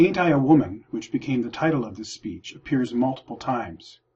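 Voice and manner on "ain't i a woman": usual speaking voice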